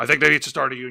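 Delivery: very low, soft put-on voice. Answering a question put to Jesse about the rights of the table, in a Jesse Ventura voice.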